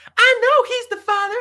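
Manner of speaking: very high, loud, shrieking scream. Acting out a mother on a talk show: imitating a screaming mother. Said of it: "she's back there screaming".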